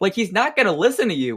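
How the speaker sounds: ordinary talk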